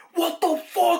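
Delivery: high-pitched scream. Retelling finding a dirty handprint on a shirt shoulder: retelling a scream. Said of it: "I screamed at my brother".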